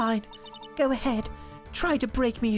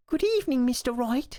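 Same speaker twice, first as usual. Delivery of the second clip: put-on slight cockney accent, slower. A game character greets the visitor in the evening, a bit cockney. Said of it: "she went a bit cockney there".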